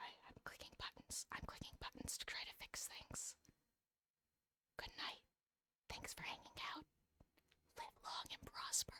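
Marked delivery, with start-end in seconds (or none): 4.8-8.9 whispered, much quieter. A host signing off to viewers, whispering. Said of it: "I don't know why I'm whispering".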